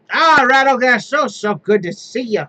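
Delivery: put-on loud, tipsy, drunken character voice. Voicing a character greeting Rattlegash, already in his cups: drunk character voice. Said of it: "he's probably in his cups already".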